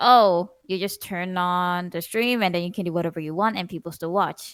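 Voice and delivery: ordinary talk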